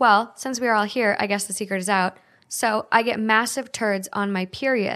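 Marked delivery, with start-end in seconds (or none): none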